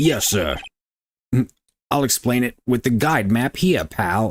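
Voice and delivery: attempted Brooklyn cop accent. Voicing a courtroom scene, the detective witness answers the prosecutor in Gumshoe's Brooklyn cop accent. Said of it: "I can't do the Brooklyn cop accent".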